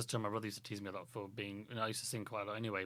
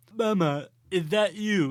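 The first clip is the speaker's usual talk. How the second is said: put-on voice with odd pauses, higher and louder; 9 semitones higher, 17 dB louder than usual. Showing that anything can sound like Christopher Walken: Christopher Walken impression. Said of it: "It's all in the pauses".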